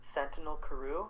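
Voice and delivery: light, unforced, gentle, mild voice. Narrating a figure in the room speaking to the sleeping character, very soft voice. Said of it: "a very soft voice across the room says".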